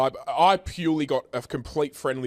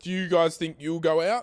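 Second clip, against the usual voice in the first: put-on awkward tone, higher; 4 semitones higher than usual. Retelling asking friends a question in front of her: imitating own awkward question. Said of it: "I got so weird".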